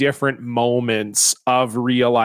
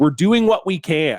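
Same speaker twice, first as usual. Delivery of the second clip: defensive, huffy voice, called back and drawn out; 3 semitones higher than usual. Retelling a CEO yelling back while getting into his car: imitating someone yelling back. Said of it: "he yells back".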